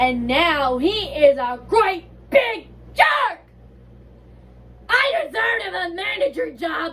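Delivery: high, swooping, sing-song cartoonish voice. After a countdown, the speaker does the SpongeBob impression: SpongeBob voice. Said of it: "I'm about to do the SpongeBob impre- impression".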